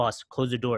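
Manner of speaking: imitated heavy Russian accent, male voice. Retelling how a funny man at work pulled her in between patients, heavy Russian accent. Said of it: "he has a very thick Russian accent".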